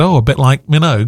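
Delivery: ordinary delivery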